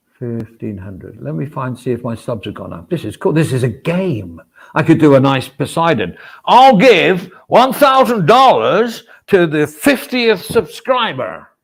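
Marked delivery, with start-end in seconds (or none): 6.5-11.4 terrible, loud, put-on fake American accent. A streamer announcing a subscriber giveaway, in a terrible American accent. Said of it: "That was a terrible American accent".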